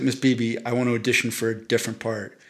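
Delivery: plain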